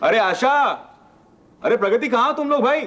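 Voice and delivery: very high, rising, calling shout. Papa, just home from the office, calling for the family: shouting. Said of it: "आज office से आकर चिल्ला के रहे हो?".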